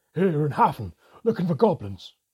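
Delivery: high, very loud, alarmed gasp. Hafflesman bursts through the door of their room; gasped. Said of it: "he gasped".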